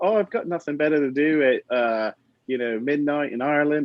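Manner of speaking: terrible, bad put-on Irish accent. Retelling what a past guest said: bad Irish accent. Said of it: "how to do an Irish accent".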